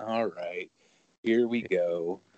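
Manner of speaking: put-on mopey monotone, flat and unenthusiastic. Mimicking how the other person used to sound, mock-bummed, glum tone. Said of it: "you used to sound kind of bummed. Like".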